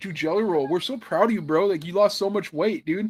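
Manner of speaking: fawning, gushing praise tone. Retelling how they praised [name], mocking imitation of gushing hosts. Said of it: "They had on [name] to be like".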